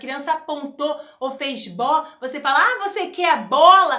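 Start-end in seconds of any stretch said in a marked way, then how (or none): 2.6-4.0 very loud, bubbly, cheerful, eager, enthusiastic tone. Demonstrating talking to a child who pointed at a ball: cheerful, enthusiastic tone. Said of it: "Você precisa gerar uma energia positiva, uma motivação na criança".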